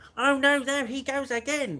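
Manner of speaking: very loud, high, drawn-out commentator cry. Retelling walking into the work toilets after mopping, in a Murray Walker impression. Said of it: "I used to do Murray Walker".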